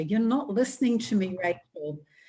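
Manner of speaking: put-on mild, half-shouted little boy's yell. Retelling how a small boy confronted his sister: imitating a child screaming. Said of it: "he started screaming at her".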